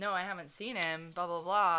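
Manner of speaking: ordinary delivery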